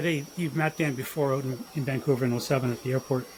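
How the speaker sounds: normal talking voice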